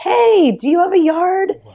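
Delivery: put-on yelling. Retelling calling out to passersby at a farmer's market: retelling her own yell. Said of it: "and I yelled at people".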